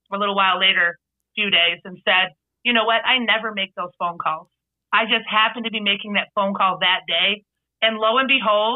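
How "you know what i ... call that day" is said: ordinary talk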